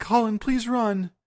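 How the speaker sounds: very high, begging, pleading voice. In a game scene, the speaker voices Ripley pleading with Colin. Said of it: "Ripley's pleading".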